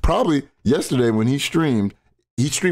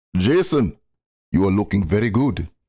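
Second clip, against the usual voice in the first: terrible put-on Arabic accent, dropped low; 4 semitones lower than usual.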